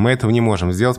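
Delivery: ordinary delivery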